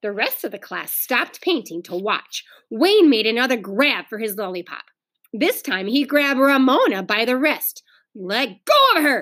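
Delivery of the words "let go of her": furious, angry, slow delivery. Narrator reads a girl speaking to a boy grabbing another child's wrist: angry. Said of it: "said Beezus angrily".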